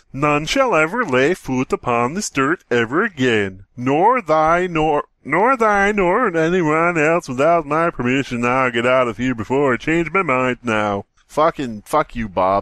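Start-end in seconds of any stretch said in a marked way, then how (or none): 0.2-11.1 put-on Swedish accent, proclaiming. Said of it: "Sounded like fucking, uh".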